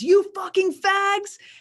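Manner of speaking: very high, loud, hostile screaming yell. Retelling what a passenger leaning out of a car screamed: imitating someone screaming. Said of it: "and he screams".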